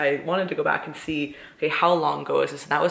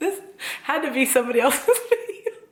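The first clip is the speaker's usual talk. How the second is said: very high voice, laughing through words; 10 semitones higher than usual. Watching an old video of oneself, laughing while talking. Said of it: "the reason that I'm laughing so fucking hard".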